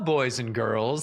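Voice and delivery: overmodulated, exaggerated kindergarten teacher voice. Describing a presentation exercise, playing the kindergarten teacher, overmodulated kindergarten teacher voice. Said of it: "you got to be the kindergarten teacher".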